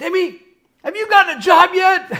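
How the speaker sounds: very high, shrill, loud mom yell. Retelling an anti-drug tv commercial, the mom calling: imitating a mom yelling. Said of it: "you hear the kid's mom yell".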